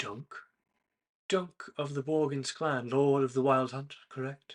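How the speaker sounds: soft-spoken, polite, courtly delivery. Voicing a stranger approaching a player from behind: soft voice. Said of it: "a soft voice".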